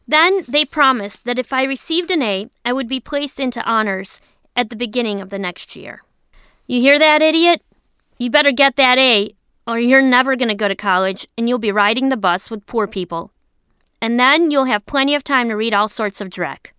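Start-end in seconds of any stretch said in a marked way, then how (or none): none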